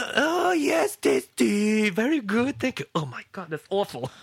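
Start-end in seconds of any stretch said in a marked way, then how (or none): 0.0-2.9 put-on very high, slow, overly polite old lady voice.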